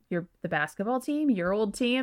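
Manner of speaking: ordinary delivery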